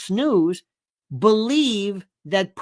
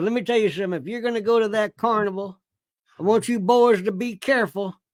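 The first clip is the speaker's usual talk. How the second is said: put-on Southern man's voice. Recalling a man from his Florida childhood, doing an Uncle Dave impression. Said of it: "he would talk like this".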